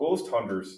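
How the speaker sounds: northern Wisconsin Upper Midwest twang. Recalling how friends from Wisconsin said the show's name, in a northern Wisconsin accent. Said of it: "with their northern Wisconsin accent".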